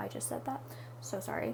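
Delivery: soft, unvoiced whisper.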